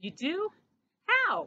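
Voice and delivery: high eager voice. Talking with his mama, he asks an eager question. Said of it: "Christopher asked eagerly".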